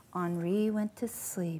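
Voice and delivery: hushed, soft, low storyteller whisper.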